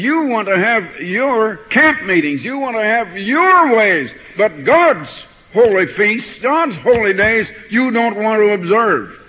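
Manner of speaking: loud, high-pitched, stern preaching voice.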